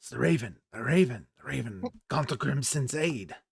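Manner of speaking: whispering excitedly. Voicing gnomes in a big open meeting recognizing the Raven: whispering excitedly. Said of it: "whispering a little excitedly".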